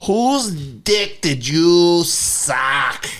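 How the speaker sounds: put-on high, blunt Boston accent. Speaker retells a phone call he got from Captain Brian: Captain Brian's Boston accent. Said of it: "this is a Boston accent, by the way".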